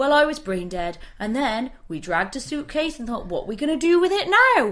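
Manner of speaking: matter-of-fact, plain delivery, nothing special. Retelling how a man recounted his story in interviews, mimicking him matter-of-factly. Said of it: "as if it's totally matter-of-fact".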